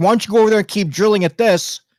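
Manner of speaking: put-on, very high, frustrated yelling. Describing watching a show's experiments, reenacting yelling at the tv. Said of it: "I'm over here yelling at the TV".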